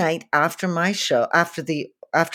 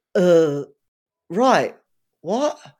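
puzzled, lost, blank-sounding confusion. Retelling how a hero reacted after being thanked: imitating Joe's blank, confused reply. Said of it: "Like that".

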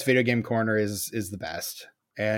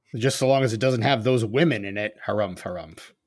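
plain

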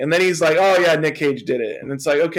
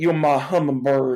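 put-on poor deep Southern accent. Speaker quotes an animated character's line, Forrest Gump accent. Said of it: "they give him like almost like a force gump accent".

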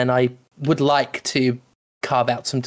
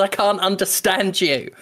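high-pitched heckling yell; 6 semitones higher than usual. Ring announcer retelling an audience member yelling at him: imitating someone yelling. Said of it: "someone in the audience yelled".

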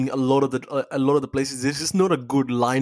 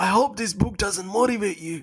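scratchy voice, pitched slightly higher; 7 semitones higher than usual. Trying the quote again in a David Goggins voice. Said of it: "something like that".

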